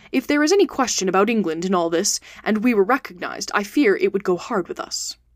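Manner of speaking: ordinary delivery, nothing marked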